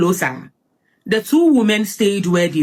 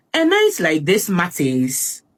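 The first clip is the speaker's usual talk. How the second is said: plain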